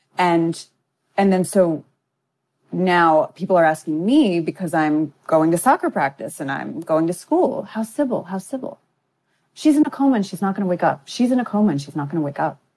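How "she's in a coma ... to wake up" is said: fast, matter-of-fact newsreader delivery. Retelling how, at nine, they answered people asking about someone in a coma: like reporting the news. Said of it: "I'm saying it like I'm reporting the news".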